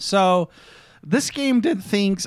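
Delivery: voice breaking and cracking mid-line. Starting to tell listeners about a game, voice cracking. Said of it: "did my voice just crack?".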